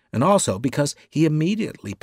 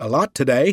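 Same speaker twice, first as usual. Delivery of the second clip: loud, upbeat, cheery, overly optimistic; 6 dB louder than usual. Narrator reads a secretary speaking to his employer, cheerful. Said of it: "Visey told him cheerfully".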